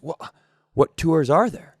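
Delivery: put-on guileless, earnest, sincere tone. Retelling how a kid asked a tour guide: imitating an earnest question. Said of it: "the kid very earnestly goes".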